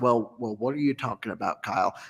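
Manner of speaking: rich, deep radio-man Southern drawl. Retelling a talk with Steve about getting a Leaf: imitating Steve's deep Southern drawl. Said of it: "he's got this real nice, deep Southern draw".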